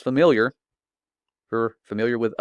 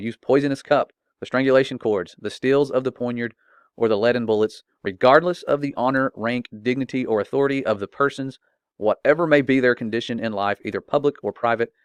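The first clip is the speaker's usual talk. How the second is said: plain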